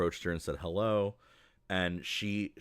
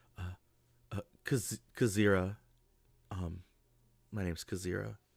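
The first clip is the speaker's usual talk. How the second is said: quiet, low whisper. Voicing a character who turns to another character: low whisper. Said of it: "says in a really low kind of whisper".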